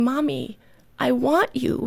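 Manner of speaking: mock tearful crying-child voice, sobbing and very slowly drawn out. Retelling a toddler's words after taking her toys: imitating a crying child. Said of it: "she started crying and saying".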